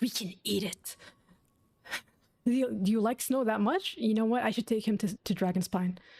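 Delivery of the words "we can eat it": hard, pushy, aggressive and forceful delivery. Repeating a game character's line back: imitating an aggressive line. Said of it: "Why did he say that so aggressively?".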